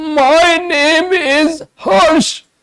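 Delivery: harsh, strangled, very high, slow strained voice. Imitating a patient's voice when asked their name: harsh, strained, strangled voice. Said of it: "this is the patient whose voice I, I just now imitated. So the voice is harsh, it is strained, and it is strangulated quality".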